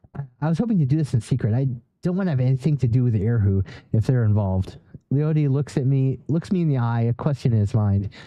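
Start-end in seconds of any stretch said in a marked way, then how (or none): 0.2-1.6 fast, quick, rushed delivery.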